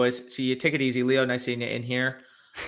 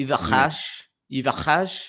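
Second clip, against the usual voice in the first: put-on French accent; 3 dB louder than usual. Asked to pronounce a name in a french accent, use a mock french accent. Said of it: "Can you pronounce in a French accent?".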